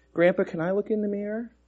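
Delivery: hesitant, halting, slightly high-pitched. Narrator reading a grandchild asking their grandpa a question, hesitant. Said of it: "I asked hesitantly".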